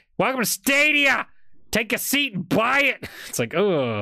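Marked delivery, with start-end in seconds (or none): 0.2-3.1 high-pitched New Yorker accent. Discussing the name Stadia, imagining a New Yorker welcoming people, in New Yorker voice. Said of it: "sounds like a New Yorker being like".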